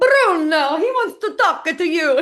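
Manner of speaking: high, loud, hammed-up mock Italian accent. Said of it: "my inaugural Bruno Tonioli accent moment".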